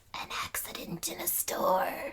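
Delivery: hushed, breathy, rasping whisper. Narrating a story, David's broken body answers Adam in a raspy David voice. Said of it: "he rasps his reply / That's my David voice".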